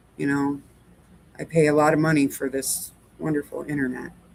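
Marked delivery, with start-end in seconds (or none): none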